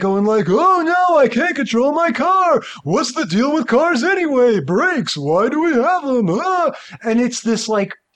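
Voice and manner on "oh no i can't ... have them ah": silly, ridiculous put-on comic voice, high-pitched. Retelling a scene where a car goes off a cliff: ridiculous Seinfeld impression. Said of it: "ridiculous Seinfeld impression".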